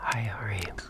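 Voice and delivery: soft ASMR-style whispering. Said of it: "It's this".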